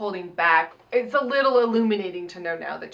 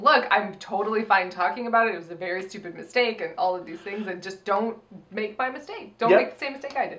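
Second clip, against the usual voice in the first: plain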